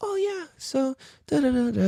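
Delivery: gentle, soft-spoken, very high voice. Retelling first talking with a man he'd met, imitating a soft-spoken man. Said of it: "He's all soft and soft spoken".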